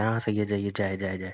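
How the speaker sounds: ordinary talk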